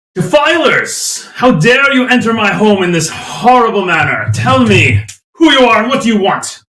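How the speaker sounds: indignant, outraged, angry call from afar. Voicing a figure calling out from deeper within the caverns: angry voice calling out. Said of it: "a voice call out from down the hall".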